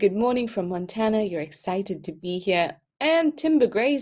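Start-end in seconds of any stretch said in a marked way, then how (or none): none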